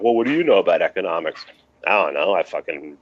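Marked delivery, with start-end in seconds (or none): none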